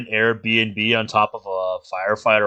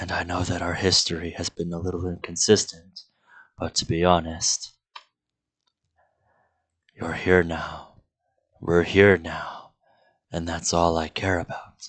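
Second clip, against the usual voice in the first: close-up, low, hushed whisper; 5 semitones lower, 4 dB quieter than usual. Playing a character, face to face with another, speaking in a whisper. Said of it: "which has lowered to a whisper".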